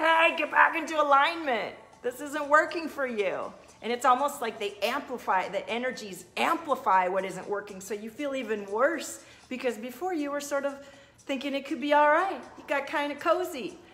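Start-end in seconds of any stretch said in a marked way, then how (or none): 0.0-3.5 high, mild mock yell. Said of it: "our soul is yelling at us".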